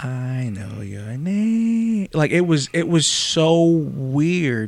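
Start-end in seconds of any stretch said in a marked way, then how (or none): 0.0-2.1 put-on arrogant, mocking, sing-song voice. Retelling what a voice said through them: imitating an arrogant mocking voice. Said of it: "arrogant, um, sound and voice, um, making fun of".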